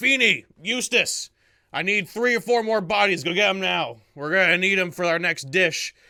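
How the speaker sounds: rough, gruff voice. Game narrator voicing an unseen figure inside a tomb, in a gruff voice. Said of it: "you hear a a gruff voice saying".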